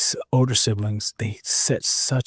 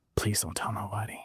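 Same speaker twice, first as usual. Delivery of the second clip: put-on, quieter begging; 9 dB quieter than usual. Retelling begging a mother after failing a test: imitating own past begging. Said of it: "I literally begged my mother".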